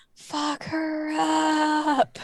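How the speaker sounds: half-whisper with upward, drawn-out pitch. Voicing Vark half-whispering encouragement to Cinna in combat: half-whispering as Vark. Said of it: "hears a whisper of Vark's going".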